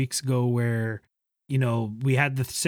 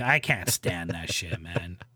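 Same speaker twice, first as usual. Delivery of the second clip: plain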